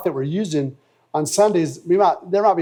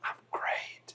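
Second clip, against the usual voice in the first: put-on whisper, quieter. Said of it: "why are you whispering?".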